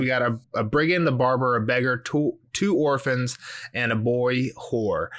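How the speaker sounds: ordinary delivery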